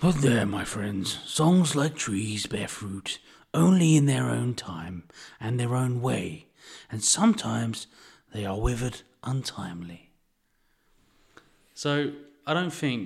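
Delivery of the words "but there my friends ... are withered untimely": lumbering talking tree giant voice. Reading a quote from the book, speaker does it in Treebeard's voice. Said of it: "Treebeard's voice".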